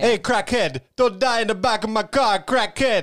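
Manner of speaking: very high, put-on Jamaican accent. Playing a cab driver addressing the passenger in the back, imitating a Jamaican accent. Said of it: "that's Jamaican".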